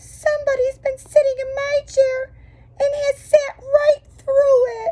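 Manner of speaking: tiny, very high little crying voice. Reading the three bears story aloud, voicing the little wee bear in his little wee voice. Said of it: "in his little wee voice".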